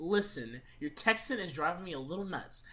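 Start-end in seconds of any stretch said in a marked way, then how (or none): none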